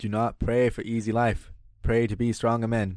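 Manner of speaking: slow, deliberate oratory, like a speech. Repeating a line given by another speaker: JFK impression. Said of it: "he's always kinda talking like this".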